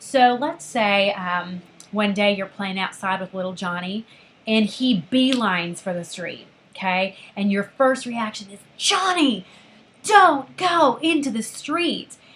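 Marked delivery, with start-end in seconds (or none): 8.8-12.2 angry, loud, drawn-out tone. Showing a parent's first reaction as little Johnny runs for the street, angry parent warning. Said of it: "it really sounds like you're angry with him".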